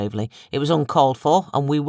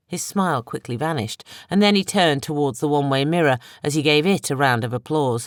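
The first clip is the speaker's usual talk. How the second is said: plain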